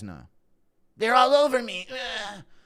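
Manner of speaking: very high, slow, drawn-out panicked cry. Play Cody getting Dillashaw flashbacks, as a Cody Garbrandt impression. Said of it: "impression of C T, Cody getting Dillashaw flashbacks".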